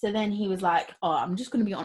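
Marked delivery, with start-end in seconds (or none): 1.0-1.8 attempted Birmingham accent. Retelling what a man from birmingham said: attempted birmingham accent. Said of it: "I was trying to do the Birmingham".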